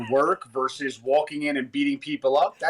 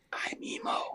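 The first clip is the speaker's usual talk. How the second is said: hushed whisper, very quiet. Retelling Batman speaking to Commissioner Gordon: imitating a whisper.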